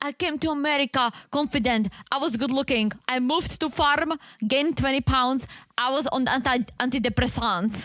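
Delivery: put-on Eastern European accent. Retelling what a woman said about coming to america: put-on eastern european accent. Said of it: "I hate doing this accent because".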